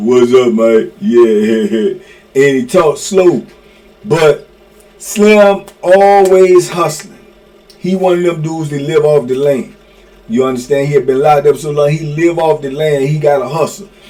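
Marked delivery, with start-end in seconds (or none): 0.0-0.9 put-on super deep voice, much lower pitch. Describing a man called Slim from prison, imitating Slim's super deep voice. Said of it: "Got a super deep voice".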